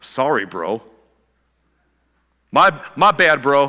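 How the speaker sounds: sarcastic, half-hearted, insincere throwaway sorry. Showing what ownership does not look like: sarcastic half-hearted apology. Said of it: "It sounds like sarcasm is what that sounds like".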